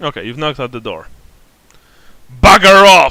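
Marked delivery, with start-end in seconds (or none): 2.4-3.1 rough, hard-edged, very loud shout. A game master voices someone inside answering a knock, in a harsh, hard voice. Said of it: "You hear a harsh, hard voice coming from".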